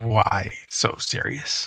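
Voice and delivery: slow, drawn-out drawl, every word stretched. Repeating the line slowly as asked: slow Joker voice. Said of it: "But say it, like, slow".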